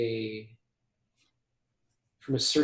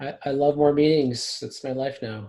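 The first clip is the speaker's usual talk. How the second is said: louder, heavily sarcastic mock delight. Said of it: "I say that in the most sarcastic way possible".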